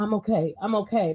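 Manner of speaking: put-on near-tears voice. Imitating a parent whose kids see them: imitating someone near tears. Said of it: "on the brink of tears".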